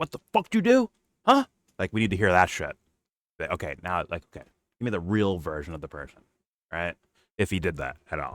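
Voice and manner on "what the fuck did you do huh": put-on very high, shrill, furious, angry ranting. Imagining a boss chewing out an employee: imitating someone chewing out an employee. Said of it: "chew out one of his employee".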